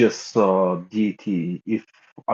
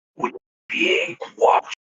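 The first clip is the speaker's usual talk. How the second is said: hushed, whispered delivery. During the game, a player's character whispers to a companion: whispering. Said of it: "I whisper to Vedant".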